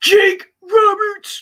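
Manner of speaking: very high voice break. Previewing next week's wrestling matches, voice cracking. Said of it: "my voice cracked on that".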